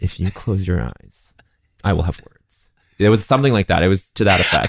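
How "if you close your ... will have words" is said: put-on tipsy, drunken, menacing voice. Asked by the friend to impersonate him: imitating Matt Rogers threatening drunkenly. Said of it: "do an impression of me to me".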